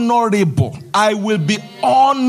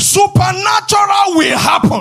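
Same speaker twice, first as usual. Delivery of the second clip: very high African preacher voice, proclaiming pulpit cadence; 9 semitones higher than usual. Preacher repeats his declaration to the congregation, african preacher's voice. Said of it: "Let me say it in my African preacher's voice".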